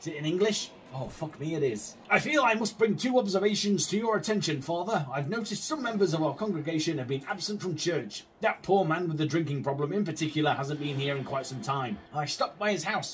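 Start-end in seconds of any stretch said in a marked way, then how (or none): none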